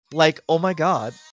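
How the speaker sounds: put-on drawn-out California Valley girl drawl. Asked by the others to do a California Valley girl: Valley girl accent. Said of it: "your very best California Valley girl".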